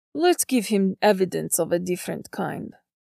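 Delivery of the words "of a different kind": plain reading voice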